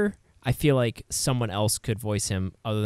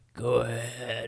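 put-on very old man voice, quieter; 5 dB quieter than usual. Joking about casting ninety-year-old Clint Eastwood: ninety-year-old Clint Eastwood impression. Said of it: "I want ninety-year-old Clint Eastwood".

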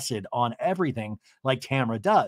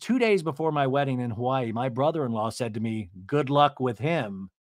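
ordinary talk, nothing marked

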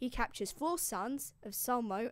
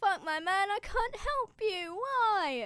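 fake sobbing, higher pitch; 9 semitones higher, 4 dB louder than usual. Retelling a god who cannot help a dying hero: mock crying. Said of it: "Hercules is, like, crying".

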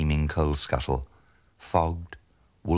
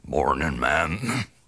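put-on wheezy, wheezing old man's voice. Narrator reads a man's greeting at the back door, wheezing. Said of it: "he wheezed".

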